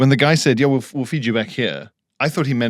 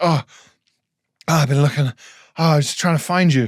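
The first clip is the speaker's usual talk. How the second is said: put-on worried tone of a man; 4 semitones higher than usual. Retelling how the man bringing the meal came looking for the speaker: imitating a worried man. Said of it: "he seemed so like worried".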